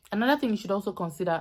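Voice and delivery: fast, rushed delivery.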